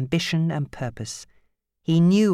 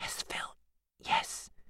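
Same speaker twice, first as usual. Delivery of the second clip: soft, breathy whisper, barely voiced. Held by the mouth, she gives the man the answer he wants, whispered. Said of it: "She whispered the answer he wanted".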